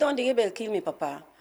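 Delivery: mock flat, unemotional, casual tone. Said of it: "talk and so casually, with no emotion".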